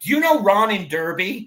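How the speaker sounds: put-on friendly American accent. Retelling a man's question to someone from England: American accent. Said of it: "I apologise for the American accent".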